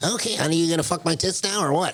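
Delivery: high put-on voice of woman around fifty. Describing a comedian's bit, acting out his older-woman character: imitating a fifty-year-old woman. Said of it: "like fifty year old chick".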